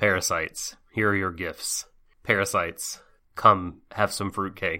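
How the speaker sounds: put-on straight, serious, utterly joyless flat deadpan. Retelling a man in a santa beard and hat, imitating straight-faced seriousness. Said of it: "totally, like, straight serious".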